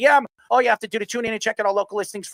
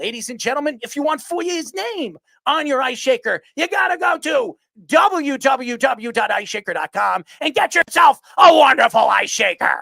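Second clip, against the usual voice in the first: wrestling announcer voice, higher; 4 semitones higher, 4 dB louder than usual. Reading a sponsor plug, sounding like Vince McMahon. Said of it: "I sounded like Vince McMahon there".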